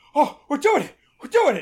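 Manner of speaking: high, loud, thrilled groundhog-voice squeal. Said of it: "He's like".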